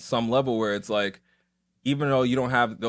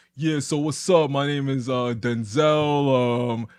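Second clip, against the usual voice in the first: very slow, stretched, street-tough voice; 2 semitones higher, 3 dB louder than usual. Recalling how he used to talk in his videos, sounding like from outside. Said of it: "I would just sound like I'm like I was outside".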